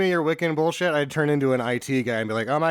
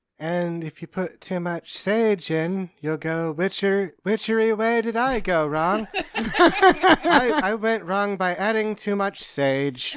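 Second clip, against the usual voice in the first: mock soft-spoken voice, higher pitch; 5 semitones higher than usual. Imitating the herb-blending class lady who talks softly: imitating a soft-spoken instructor. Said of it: "the lady that talks to softly is like".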